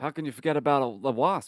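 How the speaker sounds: mock, smug, self-satisfied, needling taunt. Retelling a tied-up villain's line from the scene: imitating a smug tone. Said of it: "But he's being so smug".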